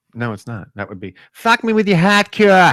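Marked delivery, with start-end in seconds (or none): 1.3-2.7 put-on Boston accent throughout, pitched up. Showing the only phrase they know how to say, in a Boston accent. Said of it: "the only thing I know how to say in Boston".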